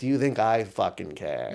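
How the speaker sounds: imitated stone-cold delivery. Retelling what a tenant being evicted said: imitating a stone-cold delivery. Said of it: "he said it in a stone cold way".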